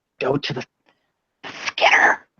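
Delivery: hushed whisper. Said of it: "whisper it down".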